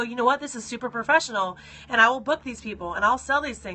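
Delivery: ordinary delivery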